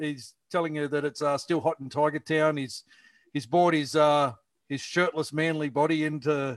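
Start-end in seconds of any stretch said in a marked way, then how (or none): none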